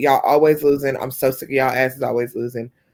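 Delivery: ordinary talk, nothing marked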